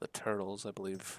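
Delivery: ordinary delivery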